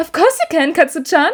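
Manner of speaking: high, sickly sweet, cloying voice. Narrator reads her reply as she leads him into the elevator: sickly sweet voice. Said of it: "she says in a sickly sweet voice".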